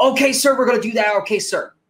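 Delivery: high put-on military bro voice. Imitating the actor following the direction to act military: Channing Tatum acting military. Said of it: "Act military".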